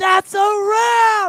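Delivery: booming, very loud, high yell, held long. Retelling standing on a table at the convention's end: retelling a loud yell. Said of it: "I yelled it as loud as I could".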